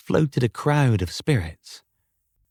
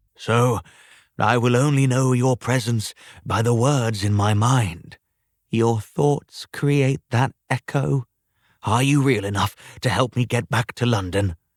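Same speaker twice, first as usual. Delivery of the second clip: plain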